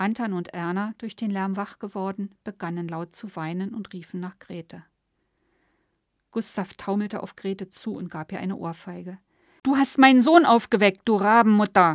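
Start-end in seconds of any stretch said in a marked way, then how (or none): 9.6-11.9 very loud, shrill, shrieking nagging tone. Gustav, having just slapped Grete, to her: shrill angry scolding. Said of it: "keifte er".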